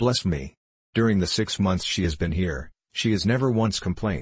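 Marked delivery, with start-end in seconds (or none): none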